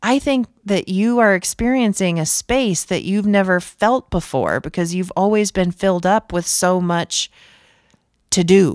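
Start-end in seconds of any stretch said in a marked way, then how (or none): none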